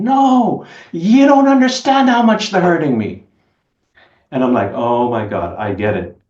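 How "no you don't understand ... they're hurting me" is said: shrill, very high, drawn-out, top-of-the-lungs scream. Retelling a man blowing up at you, imitating him screaming. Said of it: "screams at me at the top of his lungs".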